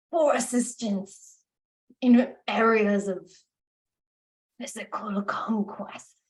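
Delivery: almost whispering, coy. Voicing a character who leans up and coyly hands over a vial: near whisper, coy. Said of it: "she almost whispers and she says".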